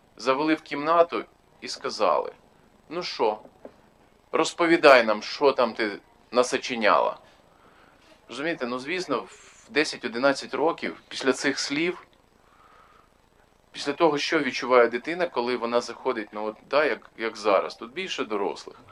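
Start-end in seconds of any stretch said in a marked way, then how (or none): 2.9-7.2 loud, harsh interrogating tone. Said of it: "таким голосом кажуть".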